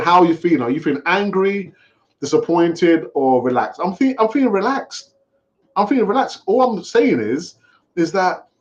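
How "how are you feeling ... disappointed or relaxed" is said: ordinary talk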